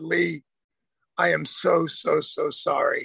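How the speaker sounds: very soft, gentle, low and slowly spoken. Recounting what he said after hearing how she felt: quoting someone speaking very softly. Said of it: "very softly said".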